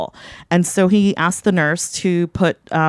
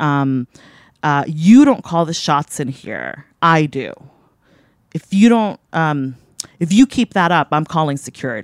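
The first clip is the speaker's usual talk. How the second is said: usual speaking voice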